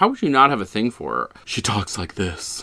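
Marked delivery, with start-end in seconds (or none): 1.4-2.6 sultry, hushed, breathy woman's whisper. Speaker describes a woman in a movie, showing how she talks: imitating a sultry woman's voice. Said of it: "She's so sultry".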